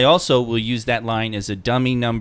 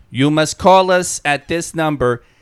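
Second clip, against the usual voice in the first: put-on loud, computer-generated robotic voice, faint Slavic accent; 5 semitones higher, 5 dB louder than usual. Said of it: "computer-generated voice with slight Slavic accent".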